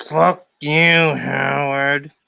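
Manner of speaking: put-on drunk, angry dwarf voice. Doing an impression of Hank the Angry Drunken Dwarf: Hank the Angry Drunken Dwarf impression. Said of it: "It was Hank the Angry Drunken Dwarf".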